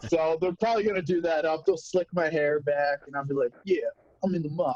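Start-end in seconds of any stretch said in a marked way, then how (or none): 3.6-4.7 put-on, played-up mobster voice. An actor describes an upcoming mob role, trying out a mob voice. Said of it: "Is that your mob voice?".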